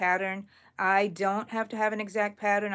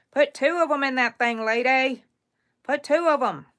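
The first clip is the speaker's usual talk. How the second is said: folksy put-on country accent, loud and high; 5 semitones higher, 6 dB louder than usual. Talking to herself to stay focused while counting yarn, in her country accent. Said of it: "Sometimes I have my my country accent".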